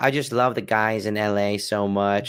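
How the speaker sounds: put-on lisping voice. Retelling a video from an LA club, lispy Jon Jones impression. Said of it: "talking in a very lispy voice".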